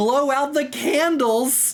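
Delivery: put-on shouting. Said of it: "he's yelling at the orcs".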